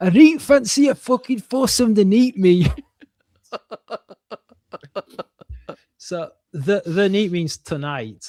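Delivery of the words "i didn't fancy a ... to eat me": attempted Geordie accent, raised and high. Voicing the next frame's figure, trying a geordie accent. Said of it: "I'm gonna try to do a Geordie accent".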